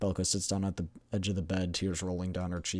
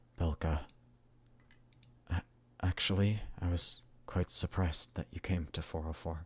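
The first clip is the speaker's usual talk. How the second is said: strange, low, unnatural hushed voice, unlike usual; 6 dB quieter than usual. After a silence, Klukai speaks to the crying Belka in a low, unnatural voice. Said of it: "starts to talk in a low, unnatural voice".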